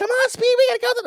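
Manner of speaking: rushed, very high cartoon dub voice, rattled off. Recalling the English dub of a cartoon, doing its fast Speed Racer voice. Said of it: "they had to talk real fast like this".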